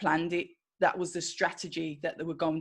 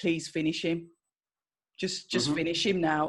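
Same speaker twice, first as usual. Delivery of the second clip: usual speaking voice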